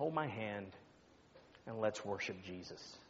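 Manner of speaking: put-on weak voice. Pastor retelling what a sick woman said to him, imitating a weak voice. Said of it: "in just a weak voice".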